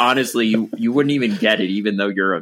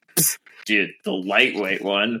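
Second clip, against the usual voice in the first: heavily sarcastic tone; 3 dB quieter than usual. Showing how a sarcastic answer about chainrings would sound: sarcastic. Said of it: "trying to be sarcastic".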